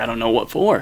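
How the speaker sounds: normal talking voice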